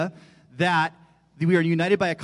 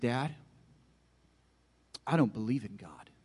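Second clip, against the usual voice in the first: mock earnest, very serious, grave child voice; 5 semitones lower, 8 dB quieter than usual. Retelling how a five-year-old son announced something at bedtime: imitating a child speaking very seriously. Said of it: "looks at me very seriously as a five-year-old".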